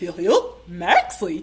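very low, deep cartoon character voice. Asked to do it again, saying the one phrase they can: Goofy voice. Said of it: "Would you like to do Goofy again?".

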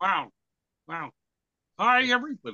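high, loud, swooping, sing-song puppet voice. Greeting everybody while others call out hello, in a Kermit the Frog voice. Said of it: "Hey, Kermit".

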